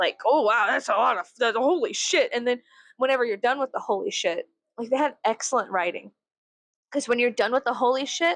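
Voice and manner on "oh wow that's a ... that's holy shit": ordinary talk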